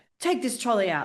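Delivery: put-on curt, snapped, barked delivery. Retelling how she turns around to you with an order, imitating a barked order.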